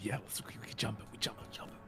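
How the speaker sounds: hushed whisper. Playing a character in a game, whispering to the others. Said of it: "I'm whispering to".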